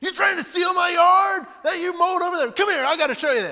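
put-on very high, very loud drunken shouting. Retelling how an angry, drinking neighbor yelled at the door: imitating a drunk neighbor yelling. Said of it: "yelling at me".

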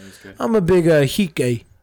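put-on Chicago accent. Chatting about a restaurant dish, repeating a line in a Chicago accent. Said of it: "That's my Chicago accent".

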